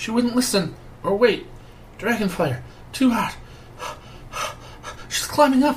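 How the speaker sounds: very high, breathless, panting rush. A young dwarven sage runs up to the party and explains, breathless. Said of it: "explains breathlessly".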